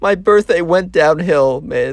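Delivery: put-on, high voice on the verge of tears. Retelling a birthday girl's complaint after she starts to well up: imitating someone welling up. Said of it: "starts to, like, well up".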